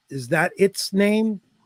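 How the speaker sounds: slow, condescending drawl, talking down. Quoting a show villain who calls a girl "it": imitating a condescending tone. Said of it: "so, so condescending".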